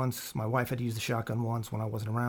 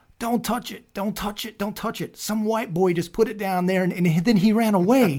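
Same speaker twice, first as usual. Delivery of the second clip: very loud, high, top-of-the-lungs yell; 9 semitones higher, 8 dB louder than usual. Retelling how a neighbor warned about a box: imitating a neighbor yelling. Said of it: "yelling at the top of her lungs".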